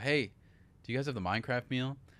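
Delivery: hushed voice. Retelling ordering with a big line behind, asking as quietly as possible. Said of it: "So I go as as quietly as possible".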